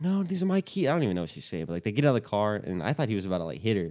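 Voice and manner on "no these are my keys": mock sobbing scream, very high, tearful. Retelling how a woman screamed at a man over her keys, imitating screaming and crying. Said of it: "She's screaming at him, like, crying".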